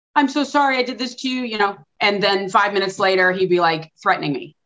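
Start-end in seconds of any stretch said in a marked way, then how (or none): 0.1-1.4 put-on crying, tearful. Retelling what the abuser said, imitating someone crying while apologizing. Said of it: "One minute he would be crying".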